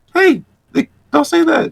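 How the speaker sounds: put-on tiny, very high little kid voice. Retelling what their past self said before reaching legend, in a little kid voice. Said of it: "like this little kid, like this little voice".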